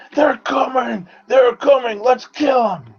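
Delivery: very high, drawn-out bellowing. A player voicing Duggery as footsteps approach, before charging, Duggery bellowing. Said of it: "Duggery's going to bellow out".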